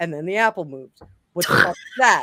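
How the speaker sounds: put-on flat delivery. Retelling a strange event, quoting Mike, imitating Mike's deadpan. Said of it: "he's very deadpan when he says things".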